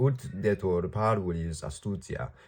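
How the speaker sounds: ordinary delivery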